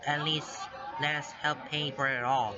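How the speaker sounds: usual speaking voice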